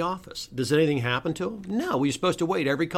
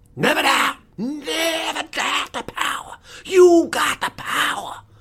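very high, very slow, drawn-out preacher sermon cadence; 10 semitones higher, 5 dB louder than usual. Speaker shows how a text sounds like a sermon, pretending to be a preacher. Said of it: "if I was pretending to be a preacher".

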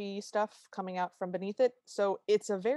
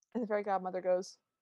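ordinary talk

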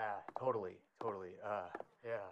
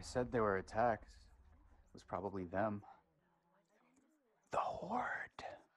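hushed whisper. Answering a question about what happened to two people: whispering. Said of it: "you don't have to whisper".

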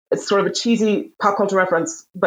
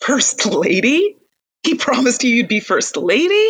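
cruel, jeering words through laughter, high and slow; 5 semitones higher than usual. Speaker retells a dark scene, quoting a man to a silent woman, imitating cruel laughter. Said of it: "he just starts laughing like cruelly".

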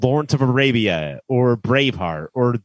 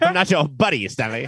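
cartoon character voice; 3 semitones higher than usual. Answering another speaker's joke: South Park character voice. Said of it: "Like a South Park character".

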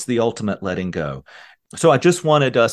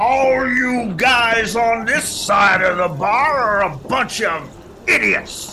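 menacing roar, bellowed, pitched very high. Reading a joke, a construction worker in a bar bellows to the room. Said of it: "and bellows".

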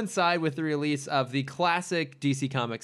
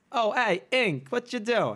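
really shoddy fake Brooklyn accent, pitched up; 8 semitones higher than usual. Mimicking the character's undercover pizza-boy act in a really bad Brooklyn accent. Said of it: "A really shitty Brooklyn accent".

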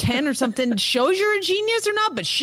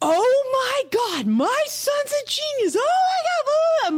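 put-on very high, rising, excited freak-out; 12 semitones higher than usual. Retelling how mom reacted to the solved cube: imitating mom freaking out. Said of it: "she freaked out".

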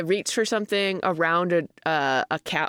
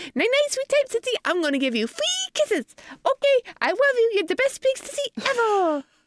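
put-on tiny, very high baby voice. Speaker voices Franklin for Evie at her request, pretending to be Franklin. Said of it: "I'm pretending to be Franklin".

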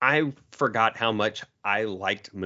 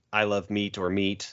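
ordinary delivery

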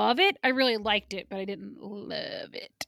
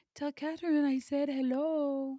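soft, light put-on French accent, pitched up; 5 semitones higher, 5 dB quieter than usual. Retelling what the flower-cart seller says at the beginning, French accent. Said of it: "That's my French voice".

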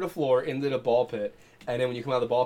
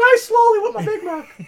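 put-on squeaky cartoon mouse voice; 10 dB louder than usual. Joking about a fast-food mascot wanting people dead: sounding like Mickey Mouse. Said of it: "Why does he sound like fucking Mickey Mouse?".

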